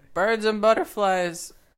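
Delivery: loud, high street seller's shouting voice. Describing a man who was selling his drawings: retelling a vendor's shout. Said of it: "And he was shouting".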